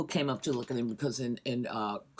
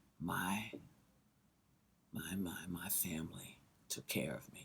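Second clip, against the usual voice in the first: very low, hushed, silky, smooth and slow drawl; 7 semitones lower, 12 dB quieter than usual. Quoting a man offering funeral services, imitating a smooth, slow voice. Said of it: "very smooth voice, kind of very slow voice".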